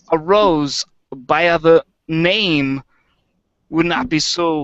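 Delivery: put-on, halting, stop-start actor voice. Showing Christopher Walken reading Shakespeare: Christopher Walken reading Shakespeare. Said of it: "Christopher Walken, like, reading Shakespeare".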